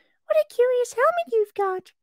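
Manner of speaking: bright, loud, high cheerful voice. Reading a story aloud, Alice remarks on a helmet: cheerful. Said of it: "she said cheerfully".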